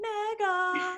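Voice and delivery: mega given maximum, hammered emphasis. Talking about a player's new contract extension, heavy emphasis on mega. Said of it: "I cannot put more emphasis on the word mega".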